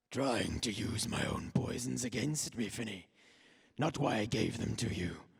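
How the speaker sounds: very low, deep, demonic voice. Game master voicing Kasht speaking through a possessed general, in Kasht's demonic voice. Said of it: "you hear a demonic voice say".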